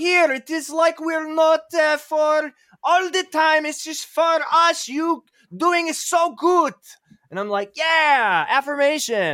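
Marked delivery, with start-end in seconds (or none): 0.0-6.7 exaggerated put-on Polish accent, much higher pitch. Retelling what someone told you, super racist Polish impersonation. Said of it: "that was my super racist Polish impersonation".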